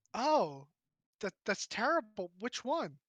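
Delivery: put-on fed-up, exasperated valley girl voice, swooping. Reacting to news that a merchant prince died, in an exasperated Valley Girl voice. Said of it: "kind of like exasperated Valley Girl".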